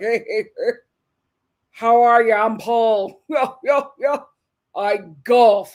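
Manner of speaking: slow, moneyed, well-off rich man drawl. Imagining how a guy named Paul would talk: imagined rich guy voice. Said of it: "his voice is like".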